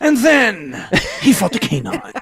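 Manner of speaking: low newscaster voice, every syllable over-pronounced. Friends recall a strange news report, and one imitates the reporter's overly pronounced speech. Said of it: "his his was like very pronounced".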